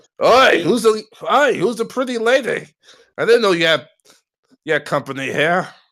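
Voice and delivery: Irish brogue, pitched very high. Voicing a character shouting at the noise below: Irish accent. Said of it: "Did [name] turn Irish all of a sudden?".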